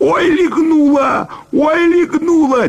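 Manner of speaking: howling. A narrator reading a story voices a character who has just been kicked, howling. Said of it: "и завопил он, схватившись за живот".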